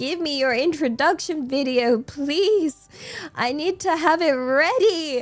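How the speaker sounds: stressed, begging, pleading voice. Recalling begging someone for an introduction video at the last minute, retelling own begging. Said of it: "on my hands and knees begging".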